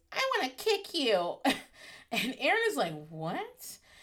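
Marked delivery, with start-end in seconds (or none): 0.1-1.3 put-on cutesy, high-pitched baby-talk voice. Retell what Brandy C says to Aaron in their room, in Brandy C's baby voice. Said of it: "says in her baby's voice".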